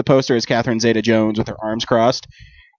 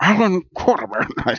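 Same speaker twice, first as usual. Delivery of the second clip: put-on Scottish accent, higher pitch; 8 semitones higher than usual. Saying the character's name in the impression: Sean Connery impression. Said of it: "that's what Sean Connery does".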